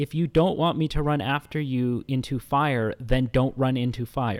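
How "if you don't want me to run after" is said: plain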